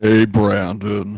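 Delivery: very low put-on character voice, dropped to the floor. Asked to do a cartoon voice like in a video: Eeyore voice. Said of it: "I don't remember the last time I tried doing an Eeyore voice".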